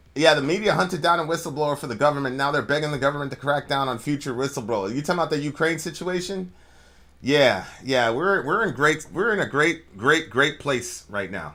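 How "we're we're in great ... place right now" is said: dry, sarcastic, falsely upbeat tone. Answering a question about the Ukraine situation: sarcastic. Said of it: "I'm saying that sarcastically".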